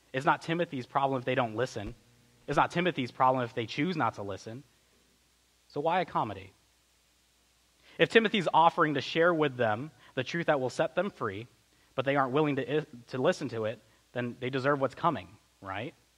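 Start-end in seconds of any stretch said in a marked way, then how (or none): none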